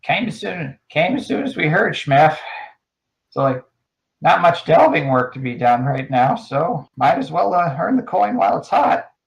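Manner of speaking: high, crackly, crackling little goblin voice. Narrating a scene and voicing a character who speaks up, crackly voice. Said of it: "You hear a kind of crackly voice".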